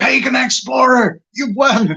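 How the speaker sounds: high-pitched, shrill, loud, clumsy bad American accent. Retelling how someone announced a giveaway winner, bad American accent. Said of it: "I can't quite do his accent well".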